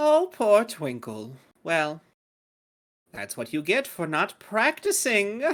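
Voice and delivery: fairy sprite character voice. The narrator voices a sprite addressing twinkle: sprite voice. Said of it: "this sprite goes".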